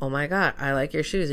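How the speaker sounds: normal talking voice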